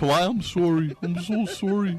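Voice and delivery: high voice with Canadian accent.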